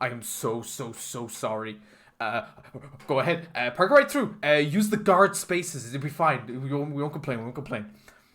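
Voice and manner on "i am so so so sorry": sudden soft, apologetic tone, very slow. Retelling a bored sergeant guard who suddenly apologizes: imitating sudden apologetic switch. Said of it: "all of a sudden switches to".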